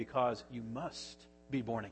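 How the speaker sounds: mock solemn, grave, low and quiet delivery. Speaker retelling a preacher's answer to someone questioning him, retelling in a grave voice. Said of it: "in a grave voice he said".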